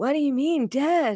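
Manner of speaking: laid-back surfer-dude voice. Reading a story aloud, the narrator voices a crowd member in a surfer dude voice. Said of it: "Surfer dude".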